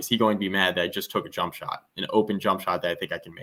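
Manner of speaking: ordinary talk, nothing marked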